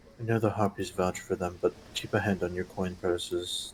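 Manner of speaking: hushed whisper. Warning the crew in character so nobody else hears: whispering to the crew. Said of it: "whisper to my crew that's here".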